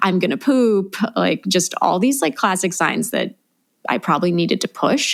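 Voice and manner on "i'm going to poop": put-on urgent scream of pain. Retelling intense pressure during labor: imitating own past screaming. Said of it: "And I was screaming".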